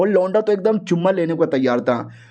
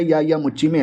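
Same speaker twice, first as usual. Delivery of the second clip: ordinary delivery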